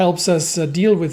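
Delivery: ordinary delivery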